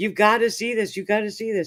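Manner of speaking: put-on frantic, insistent, high-pitched urgent yelling. Retelling a phone call to Ron Ball: imitating own screaming into the phone. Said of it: "me screaming into the phone at the top of my lungs".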